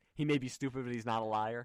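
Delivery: plain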